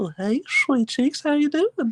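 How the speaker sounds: creepy, very high cartoon voice, close to the mic. Mess around with Frank, getting real close to the mic, with a Herbert the Pervert impression. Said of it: "my Herbert the Pervert impression".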